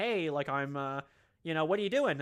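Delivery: plain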